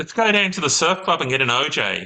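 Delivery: high, loud Australian accent. Trading Australian slang with another speaker: Home and Away Australian accent. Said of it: "That was very Home and Away".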